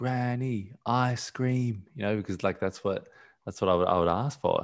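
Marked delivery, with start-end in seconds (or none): 0.0-1.8 put-on child scream, higher, slower. Retelling being a child calling for granny, retelling a child's scream. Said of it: "I was screaming for my granny".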